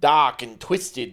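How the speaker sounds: attempted, put-on Australian accent. Trying a phrase again after feedback, attempted australian accent. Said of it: "That was that was closer".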